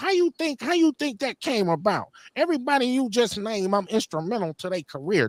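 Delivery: high ranting put-down. Retelling how Shan went off on him in an interview: Shan voice. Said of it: "That's my Shan voice".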